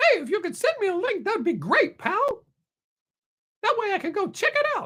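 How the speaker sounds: very high cartoon squeak with big pitch swoops. Asking for a link, saying it like Mickey Mouse: Mickey Mouse voice. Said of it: "say it like Mickey Mouse".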